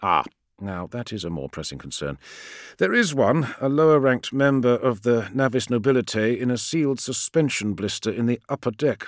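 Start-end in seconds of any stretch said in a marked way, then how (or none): none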